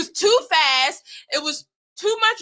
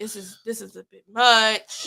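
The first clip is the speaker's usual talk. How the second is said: mock nervous whisper, lower; 6 semitones lower than usual. Retelling a friend nervously whispering on a ride: imitating a nervous whisper. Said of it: "whispering to me".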